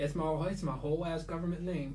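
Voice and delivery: ordinary talk, nothing marked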